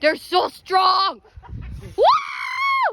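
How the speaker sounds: screaming.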